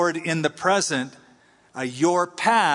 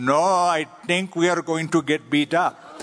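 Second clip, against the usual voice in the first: imitated Indian accent. Retelling what Ravinder said as a crowd surrounded them, imitating Ravinder's Indian accent. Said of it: "he said to me in that sweet Indian accent".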